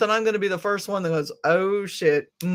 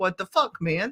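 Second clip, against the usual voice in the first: put-on defensive tone, quieter; 4 dB quieter than usual. Describing own reaction to an upsetting message, acting out own defensiveness. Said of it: "a little bit of defensiveness that comes up".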